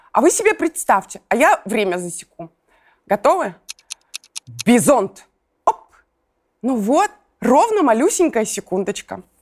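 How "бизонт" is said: peppy, bright, hearty fatherly voice. Saying a word for listeners to picture while timing them, in a cheerful fatherly voice. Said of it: "я скажу «бизонт» бодрым папиным голосом".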